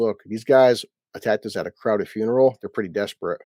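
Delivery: ordinary delivery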